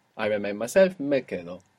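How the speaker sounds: ordinary talk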